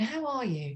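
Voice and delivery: soft, quiet, gentle inquiring tone. Showing how to greet an earth green colleague: demonstrating soft tone. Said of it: "So that soft tone".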